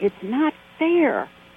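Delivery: acted-out, high, protesting little kid's yell. Recalling yelling at her mom as a little girl: retelling a childhood yell. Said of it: "I remember yelling at my mom and saying".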